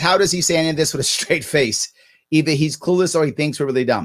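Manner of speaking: ordinary delivery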